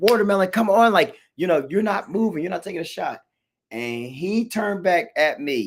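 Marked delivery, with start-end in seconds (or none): 0.0-3.2 pitched-up, high yell. Retelling yelling at a kid wrestling on the mat, retelling a yell. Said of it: "yelling like".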